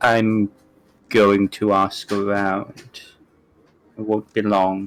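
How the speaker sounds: low, hushed, confidential voice. Speaking as Peach after loping over to Ashwood: low Peach voice. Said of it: "in a low voice says".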